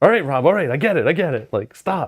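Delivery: mock high-pitched yell. Acting out a fellow player yelling at the screen: imitating Yogi yelling. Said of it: "he's yelling at me on his, on his screen".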